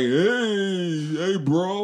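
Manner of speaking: put-on very high, drawn-out Jersey accent holler, hey stretched. Retelling a dude heard in a scene, imitating a hollering Jersey accent. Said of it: "I heard like a Jersey accent where dude was hollering like".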